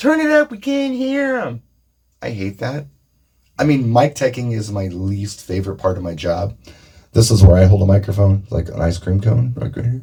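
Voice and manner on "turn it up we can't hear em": very high, shrill shrieked complaining scream. Imitating an audience that cannot hear a guest: imitating an audience screaming. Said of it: "the rest of the audience is screaming at you".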